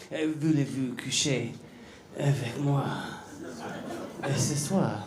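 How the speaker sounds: whispered, breathy, sultry, seductive French accent. Showing why the french accent sounds sexy, in a sexy french accent. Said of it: "that French accent is sexy when you hear".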